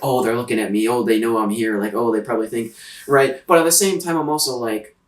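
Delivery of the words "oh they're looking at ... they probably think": ordinary delivery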